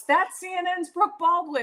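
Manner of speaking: mock, very high, loud announcing shout. Retelling a team member calling out a name backstage: imitating someone shouting. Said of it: "somebody on her team shouts".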